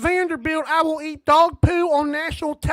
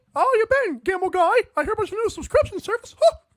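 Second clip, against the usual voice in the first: put-on cartoon dog voice, higher; 6 semitones higher than usual. Doing a cartoon voice after being asked about one: Goofy voice.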